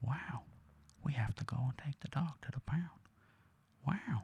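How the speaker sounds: very quiet, soft, high whisper. Describing how an actor talks in every film: whispery Owen Wilson impression. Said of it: "he just kind of talks like this".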